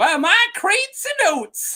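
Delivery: put-on very high, swooping, quirky old Southern accent. Quoting the weird things she says, in an eccentric Southern voice. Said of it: "sound like eccentric Southern".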